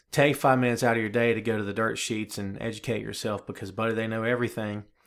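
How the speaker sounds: usual speaking voice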